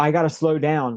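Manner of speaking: normal talking voice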